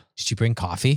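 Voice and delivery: mock deadpan, serious voice. Retelling asking the assistant about coffee while driving: imitating a deadpan serious question. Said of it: "a deadpan serious look".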